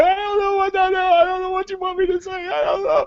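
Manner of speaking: desperate, tearful, very high crying voice. Retelling being pulled from a car at gunpoint: retelling own crying. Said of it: "I am crying".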